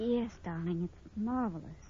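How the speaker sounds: very soft, level, flat voice with no enthusiasm. Valerie answers mr. denton, who says he won't be blind, flat and unexcited. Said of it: "You don't sound very excited".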